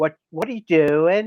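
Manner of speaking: put-on small girl's voice, calling out loudly. Retelling how a lady heard a spirit speak, in a little girl voice. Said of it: "she heard a little girl voice going".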